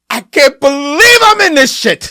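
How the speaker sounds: top-of-the-lungs screaming, very loud and high-pitched. Act out an actor who cannot believe he is in this film, imitating someone screaming at the top of his lungs. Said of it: "he is screaming at the top of his lungs".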